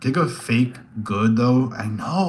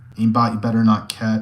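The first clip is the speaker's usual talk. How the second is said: ordinary delivery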